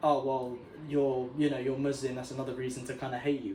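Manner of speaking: usual speaking voice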